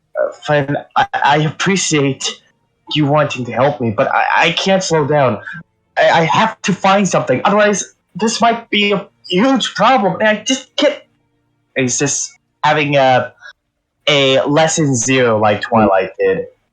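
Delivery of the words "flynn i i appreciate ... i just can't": out-of-breath, stumbling, frantic panic, high and rising. Voicing a character who answers another's offer of help: panicked, breathing frantically. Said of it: "He's just in a full state of panic".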